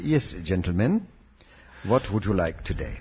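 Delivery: put-on Indian accent. Retelling a dinner out, quoting the waiter greeting the table: indian accent. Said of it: "in his beautifully intoned Indian accent".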